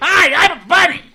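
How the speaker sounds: shrill, high, very loud comic voice. Playing a bunny in a fantasy world where animals can speak, Gilbert Gottfried voice. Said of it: "They only speak in Gilbert Gottfried's voice".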